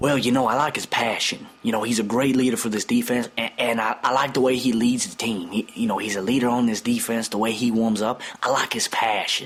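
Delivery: put-on impersonation voice, partly whispered.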